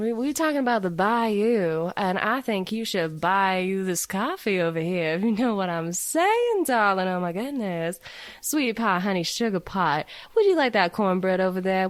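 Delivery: put-on Southern Louisiana accent, "bayou" stretched out. Demonstrating a different regional accent to a co-host, in a louisiana accent. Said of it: "this is a little more on the Louisiana side".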